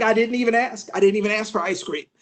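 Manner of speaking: plain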